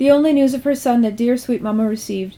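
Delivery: ordinary delivery, nothing marked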